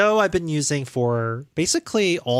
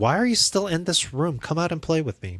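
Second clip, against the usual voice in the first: put-on voice speaking as a pet; 3 semitones higher than usual. Apologizing to a pet that wants play, speaking as Peach. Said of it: "She's like".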